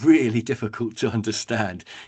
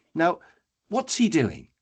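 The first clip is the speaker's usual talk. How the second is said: plain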